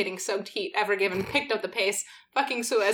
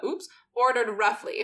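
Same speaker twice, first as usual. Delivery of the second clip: ordinary talk, nothing marked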